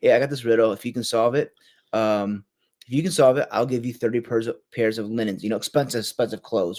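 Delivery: ordinary talk, nothing marked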